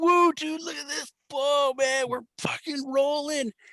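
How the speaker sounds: put-on giddy, very high, stretched-out ecstatic whoop. Retelling cashing paychecks together, acting out own past ecstasy. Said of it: "I was so ecstatic".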